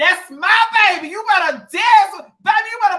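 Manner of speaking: very loud, high screaming from a crowd. Retelling dads in the crowd cheering their child: imitating dads yelling. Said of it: "be in there yelling, screaming for their child".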